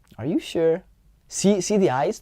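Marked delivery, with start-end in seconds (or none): 0.2-0.9 teasing, playful, doubtful, skeptical tone. Showing a playful disagree in conversation: playful skeptical tone. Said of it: "They become skeptical".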